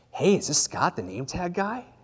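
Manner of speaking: alluring, beautiful, sexy female voice. Retelling a phone call from an unknown caller: imitating a sexy female voice. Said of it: "beautiful, sexy female voice".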